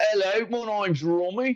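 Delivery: put-on Cockney accent, very high pitched. Demonstrating an accent they can't do well, Cockney-sounding attempt.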